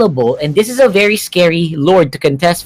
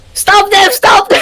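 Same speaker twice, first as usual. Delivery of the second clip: high, mock screaming. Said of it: "he was screaming at his teammates".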